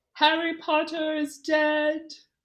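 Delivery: high, slow, deliberate, drawn-out dark-lord voice. Showing how Voldemort did it in the movie: Voldemort voice. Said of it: "He did it".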